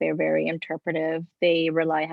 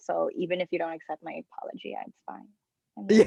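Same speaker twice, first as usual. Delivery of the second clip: ordinary delivery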